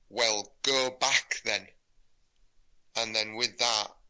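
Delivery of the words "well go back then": really stern, severe, no-nonsense put-on woman's voice. Retelling a dream where a woman answered him, imitating her really stern voice. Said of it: "she said in a really stern voice".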